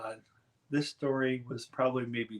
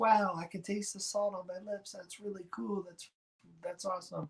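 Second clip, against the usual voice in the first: play-acted high, full-volume yell; 8 semitones higher than usual. Retelling coming out of the ocean, calling to brother-in-law and wife: retelling own yell at full volume. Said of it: "I yelled at the top of my lungs".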